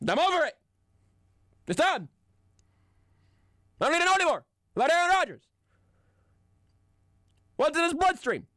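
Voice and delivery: strong talk radio host voice. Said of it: "like a good talk radio host".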